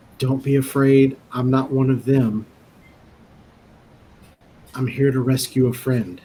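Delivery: whispering. Speaking in character to strangers in a dark tunnel: whispering. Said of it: "I'm gonna whisper".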